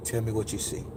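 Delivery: hushed, smooth, very soft, soothing woman's voice. Recalling a trance, imitating the woman's smooth, soothing voice. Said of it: "by me hearing that soothing voice".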